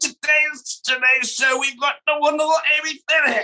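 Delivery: acted over-eager excitement. Impersonating a show's presenter introducing a guest: overexcited Nigel impression. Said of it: "there's my impersonation".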